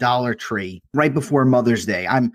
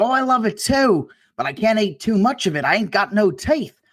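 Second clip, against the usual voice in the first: put-on heavy, laid-on British accent, pitched up; 8 semitones higher than usual. Retelling what a British girl said to the cashier, in a thick British accent. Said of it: "a really thick British accent".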